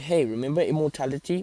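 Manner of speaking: ordinary delivery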